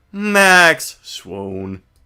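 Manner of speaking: flat, expressionless, deadpan monotone. After someone picks the right card, the performer reacts in deadpan monotone. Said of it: "my deadpan monotone voice".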